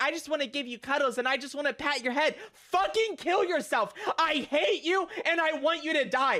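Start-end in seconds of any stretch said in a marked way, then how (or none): 2.5-6.4 acted-out high, full-on yelled, screaming rant. A streamer snaps at people who come into the stream, screaming rant. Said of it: "I'm gonna be screaming about some shit".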